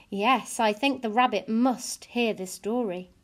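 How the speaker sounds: usual speaking voice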